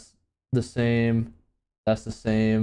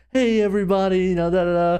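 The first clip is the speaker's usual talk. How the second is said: happy, bright tone, pitched a notch higher; 8 semitones higher, 3 dB louder than usual. Comparing dev update videos, imitating happy Jeff Kaplan. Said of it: "Jeff Kaplan all, like, happy".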